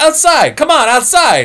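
play-acted worked-up loud yell, high-pitched and swooping. Telling a story about a guy at a barbershop door, imitating loud agitated yelling. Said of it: "he's talking really loud and agitated".

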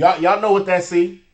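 plain

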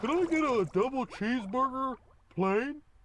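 animated cartoon starfish character voice. Ordering food at McDonald's for the group, in his Patrick voice. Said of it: "He's using his Patrick voice".

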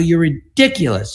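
exasperated, fed-up, yelled outburst. Retelling yelling at the agent who kept insisting: retelling own yell. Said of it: "I started yelling at him".

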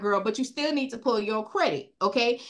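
ordinary talk

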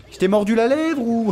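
high, mock-soothing baby talk.

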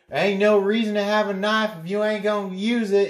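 put-on very high, shouted, Midwestern Kansas accent. Act out the one person who always yells out, imitating a Midwestern Kansas yell. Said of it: "I can talk like that because I'm from Midwestern Kansas".

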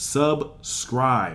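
emphatic, high, loud, punched, correctly said "subscribe".

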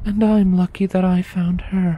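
very high-pitched mumbling, said to the side. Sitting by a crackling fire with a companion, she finally speaks, muttered almost inaudibly. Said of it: "she eventually muttered".

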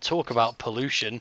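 normal talking voice

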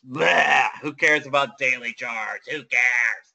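strange, odd, made-up put-on voice. Trader mocking the idea of daily charts; weird voice. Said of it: "that's a weird voice".

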